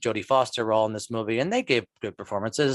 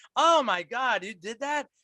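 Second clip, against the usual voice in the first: play-acted, very high, drawn-out appalled horror; 12 semitones higher than usual. Retelling a movie scene, quoting Jon Lovitz: imitating horrified Jon Lovitz. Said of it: "Jon Lovitz is, like, horrified".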